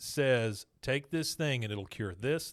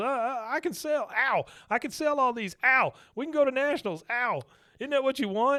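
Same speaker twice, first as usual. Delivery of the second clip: put-on very high, loud, stammering, panicked pleading; 11 semitones higher, 5 dB louder than usual. Retelling a scene, voicing Bill: imitating panicked Bill. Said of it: "he's just real panicked now".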